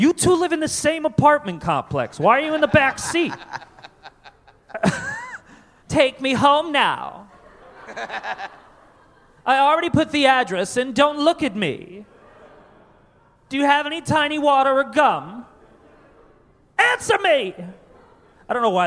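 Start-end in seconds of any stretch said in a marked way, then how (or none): 0.0-17.5 put-on high, whiny spoiled rich kid voice. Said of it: "that's my rich kid voice".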